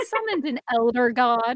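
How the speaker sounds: ordinary delivery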